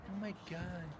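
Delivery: meek, soft, timid exclamation. Showing how a timid voice would say it: imitating a timid voice. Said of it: "just that real timid sense".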